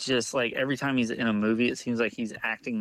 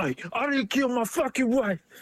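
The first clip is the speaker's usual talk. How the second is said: badly botched, very high-pitched put-on voice; 12 semitones higher than usual. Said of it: "That was really bad".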